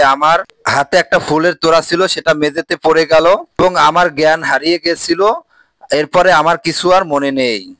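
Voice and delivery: ordinary talk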